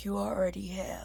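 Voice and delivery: hoarse, soft, very raspy, voice nearly gone. Retelling a movie's ending, voicing the guy's last line in a really raspy voice. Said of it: "is like really raspy, like he lost his voice".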